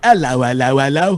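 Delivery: put-on British accent, hello said as ell-oh. Repeating a greeting joke to the other speaker, British accent. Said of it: "in a British accent".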